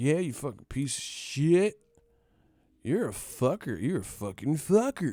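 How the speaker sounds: goofy, swooping, awkward and unconvincing swearing. Mocking people who swear but don't sound right: imitating goofy-sounding cussing. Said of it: "motherfuckers cuss and they don't sound right cussing".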